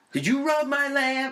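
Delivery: very high-pitched, put-on caricature character voice. Quoting a line from Aladdin: Robin Williams' Robert De Niro impression. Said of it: "his Robin Williams, uh, impersonation of Robert De Niro".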